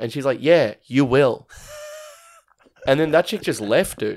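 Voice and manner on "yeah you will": rude, dismissive, brushing-off tone. Retelling how a woman on the phone answered a customer: imitating a dismissive retort. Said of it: "She was just dismissing customers".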